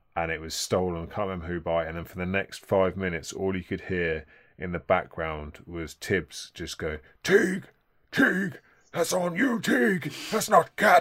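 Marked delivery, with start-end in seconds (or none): 7.3-11.1 shrill, very loud, high, throat-straining bellowing. Acting out what was heard in the background after Teague's stolen pass, a terrible Thibs impression. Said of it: "that was a terrible Tibbs impression".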